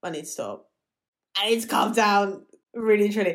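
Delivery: tearful, choked-up voice catching with tears. Talking about a scene where she kisses him, tearing up. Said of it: "I'm actually tearing up".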